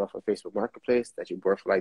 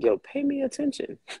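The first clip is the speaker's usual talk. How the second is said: high-pitched mock yelling in a dog voice. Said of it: "She over here just yelling in my ear like".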